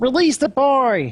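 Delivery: very high-pitched voice of a tiny creature. Game master voicing a character in his smaller form: higher-pitched small-creature voice. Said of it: "his voice is much higher pitch because he's smaller".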